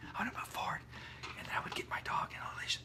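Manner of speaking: soft, unvoiced whisper.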